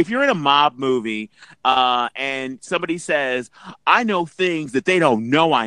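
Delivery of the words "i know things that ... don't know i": ordinary talk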